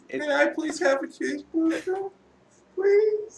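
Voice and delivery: mocking put-on voice. Repeating another player's request back at them: mocking imitation of a player. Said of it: "that's me mocking you".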